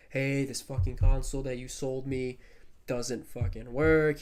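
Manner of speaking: ordinary talk, nothing marked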